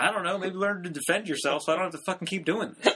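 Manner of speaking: casual, unbothered delivery. Retelling a joke from a trailer for a new special: imitating Tom's nonchalant delivery. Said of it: "He is so nonchalant about that shit".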